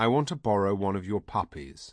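ordinary delivery

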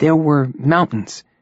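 dreamily. Narrator reads Jeff answering George's question, dreamily. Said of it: "said Jeff dreamily".

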